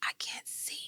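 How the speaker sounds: faint, breathy, barely-there whisper. Retelling collapsing in a hospital wheelchair and calling to Mama: imitating own whisper. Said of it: "and I whisper".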